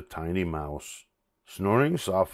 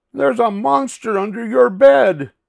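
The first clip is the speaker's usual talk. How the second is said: very high, very loud crying out; 9 dB louder than usual. Pig speaks up to Duck right after Bear's warning, crying out. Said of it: "cried Pig".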